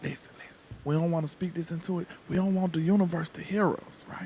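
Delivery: quiet whispering. Hushing a prediction so the universe won't hear: whispering. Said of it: "We gonna whisper this".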